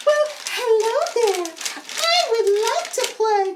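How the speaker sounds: very high, little puppet character voice. Answering the first puppet in a puppet show: second puppet's voice. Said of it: "give each puppet a different voice".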